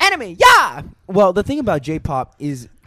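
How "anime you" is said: anime-style exclamation, higher and louder. Asked by another speaker for a quick anime cheer, anime-style cheer. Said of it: "Can you give us an anime ya really quick?".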